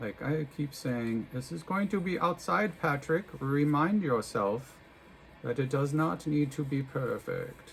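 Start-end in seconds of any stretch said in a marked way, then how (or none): 1.3-7.7 sudden, German-accented English. Talking himself through wrapping clumps of hair: german accent. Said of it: "I suddenly have a German accent".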